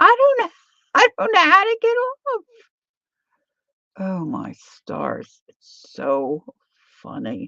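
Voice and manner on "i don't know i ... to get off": very high, shrill, loud screaming. Retelling how a woman stuck on a ride cried out: imitating someone screaming. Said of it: "she's screaming".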